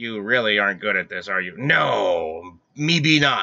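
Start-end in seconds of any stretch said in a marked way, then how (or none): 1.6-3.4 very slow pirate voice, long stretched "no". Answering a companion while playing a game, speaking in a pirate voice. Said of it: "Are you talking like a pirate?".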